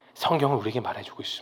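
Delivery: fast, soft, low hushed whisper.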